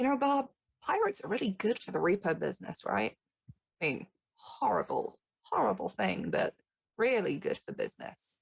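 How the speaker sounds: close, confiding, conspiratorial, leaning-in stage whisper. Voicing Avery leaning over the desk close to Bob: Avery half-whispering. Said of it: "getting close enough to kinda whisper".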